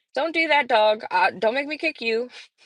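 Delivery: ordinary delivery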